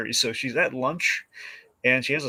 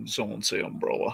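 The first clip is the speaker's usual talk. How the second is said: fake theatrical voice, softer; 6 dB quieter than usual. Imagining an actor off to the side of the scene: Philip Seymour Hoffman impression. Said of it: "Philip Seymour Hoffman's off to the side".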